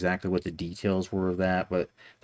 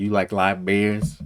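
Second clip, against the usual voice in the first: poor imitation of speech impediment; 6 dB louder than usual. Retelling walking up to someone, imitating his way of talking. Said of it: "I was trying to say it, you know, like him".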